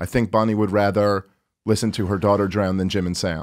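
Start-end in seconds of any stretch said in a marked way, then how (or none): none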